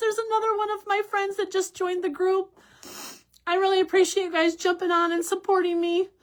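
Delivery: tearful, crying voice. Live-stream host thanking friends for joining and supporting: crying. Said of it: "I'm crying".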